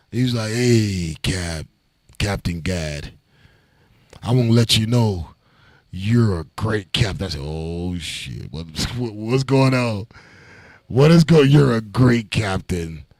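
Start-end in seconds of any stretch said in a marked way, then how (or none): 0.5-7.3 put-on drunk voice, much lower. Retelling a drunk phone call from a brother, imitating a drunk caller. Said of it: "This dude called me drunk".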